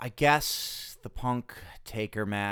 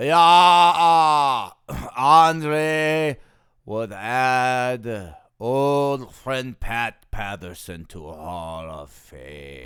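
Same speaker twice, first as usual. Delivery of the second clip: booming slow voice with "uh" stretched out; 10 dB louder than usual. Answering interview questions in a skit: Andre the Giant voice. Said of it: "Andre, it's been a pleasure talking to you".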